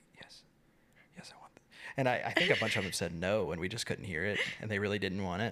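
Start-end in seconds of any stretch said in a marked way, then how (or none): 0.2-1.6 hushed, very soft, barely-there whisper. Imitating contestants accepting a rose: imitating a soft whisper. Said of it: "they whisper so softly when they say yes".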